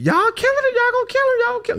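very high, swooping, top-of-the-lungs screaming. Retelling a scuffle with police, imitating Tasha screaming at top of her lungs. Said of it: "hear a girl screaming".

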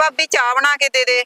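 plain reading voice

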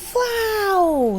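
squealing. An aunt wakes to find they have reached the sea: squealing. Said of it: "завищала наступного ранку тітонька Піпсі".

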